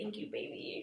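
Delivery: soft, unvoiced whisper.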